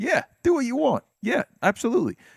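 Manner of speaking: very high-pitched put-on New York accent. Acting out what others say instead, in a New York accent. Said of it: "You sounded very New York right there".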